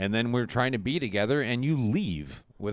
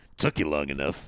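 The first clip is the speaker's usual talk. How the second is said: mock-indignant tone, much lower; 7 semitones lower than usual. Retelling a story of the grandpa's arrest, acting out his indignant reply to the cops. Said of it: "he gets all like indignant".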